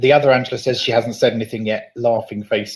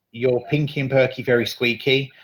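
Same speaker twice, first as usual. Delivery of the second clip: ordinary talk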